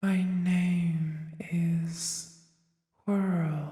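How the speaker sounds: breathy put-on whispering voice. Game master voicing Whirl introducing herself to the players, in a breathy whisper. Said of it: "you hear this breathy voice that sends shivers down your spine".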